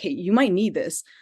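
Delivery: ordinary delivery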